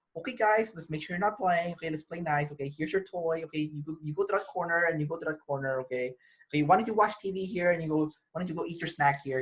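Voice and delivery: very soft, gentle, hushed coaxing voice. Acting out how the listener softly manages their group, imitating a very soft voice. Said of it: "it's like very soft".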